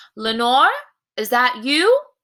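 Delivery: calling out loudly with swooping pitch. Showing how the word sounds like calling for a person: calling out lenore. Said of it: "Like you're calling for a person".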